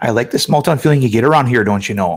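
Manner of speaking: small-town Wisconsin accent. Showing how people around Wisconsin talk: Wisconsin accent. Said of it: "it would be something like".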